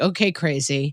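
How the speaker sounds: scornful dismissive tone. Retelling a front desk worker's reaction: imitating an eye-rolling dismissive tone. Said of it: "starts rolling her eyes at me like".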